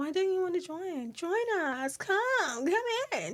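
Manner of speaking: bright, cheerful coaxing. Acting out the cheerful family urging someone inside: imitating clingy cheerful family. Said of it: "They're a cheerful family".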